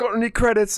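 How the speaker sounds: very high, very loud, shrill, bad fake British accent. Imitating someone telling Chris about playing a game: bad British accent. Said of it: "I like your British, your British accent".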